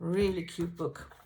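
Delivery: ordinary delivery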